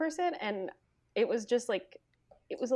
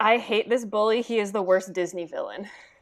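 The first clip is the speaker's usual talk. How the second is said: ordinary talk, nothing marked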